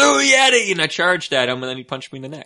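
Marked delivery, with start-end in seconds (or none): 0.0-0.7 very high, very loud, high-pitched scream. Retelling charging at a man, the speaker reenacts screaming. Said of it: "So I screamed".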